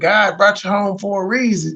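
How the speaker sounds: plain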